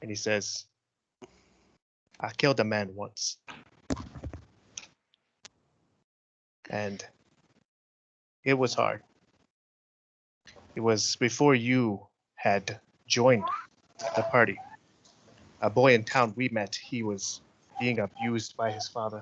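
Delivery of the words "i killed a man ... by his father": hushed, under-the-breath voice. Voicing a character confessing privately to a companion: under his breath. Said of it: "under his breath".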